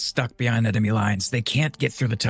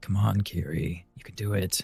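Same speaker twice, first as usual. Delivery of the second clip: slow, hushed murmur muttered under the breath; 4 semitones lower, 6 dB quieter than usual. Voicing a character staring at a candlestick: under his breath. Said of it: "under his breath, he's like".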